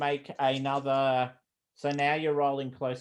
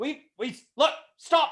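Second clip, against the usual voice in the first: very loud, high-pitched shout; 12 semitones higher than usual. Narrating a scene, voicing the small Russian: yelling in a really loud voice. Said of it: "yells out stop in a really loud voice".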